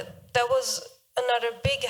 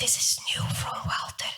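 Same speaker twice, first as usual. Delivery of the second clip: breathy, hushed near-whisper. Recalling the words of a store owner: retelling an almost-whisper. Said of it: "she was almost whispering like".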